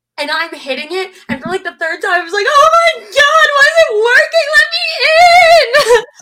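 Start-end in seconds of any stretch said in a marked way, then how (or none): 2.5-6.1 mock very high, very loud theatrical sobbing, stretched. Speaker retells trying to get in while cast members laugh, comic mock-crying. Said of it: "comically crying".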